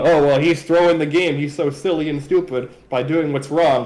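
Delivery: plain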